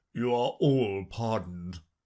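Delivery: low, quiet murmured aside. The King speaks to the company generally as he walks off; low voice. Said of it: "the King say in a low voice".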